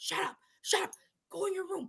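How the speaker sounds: put-on high, urgent yelling, half-stifled. Retelling what the brother said to them: retelling brother's half-suppressed screaming. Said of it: "he's screaming or trying not to scream".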